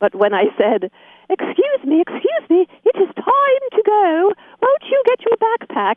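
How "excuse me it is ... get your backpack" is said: fake British accent, much higher pitch. A mom telling her little kids to get their backpacks: fake British accent. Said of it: "I tried out a British accent".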